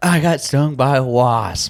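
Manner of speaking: put-on terrified, high child voice, words dragged very slowly. Retelling a stung child running over in terror: imitating a terrified kid. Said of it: "he is terrified".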